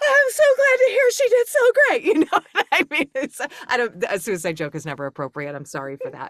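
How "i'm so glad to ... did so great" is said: put-on excited supportiveness, higher and louder. Retelling the wife's reply about the show, imitating put-on excitement and support. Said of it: "excited and supportive".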